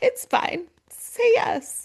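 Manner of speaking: amused giggling, very high-pitched. Retell how a man interrupted another's answer and told him to say yes, imitating someone giggling. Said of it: "he literally was like giggling".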